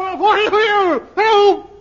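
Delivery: loud high-pitched shout.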